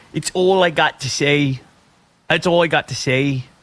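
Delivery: plain put-on Irish accent. Quoting a golfer's closing comments: Irish Forrest Gump voice. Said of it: "Very Forrest Gump, like a Irish Forrest Gump".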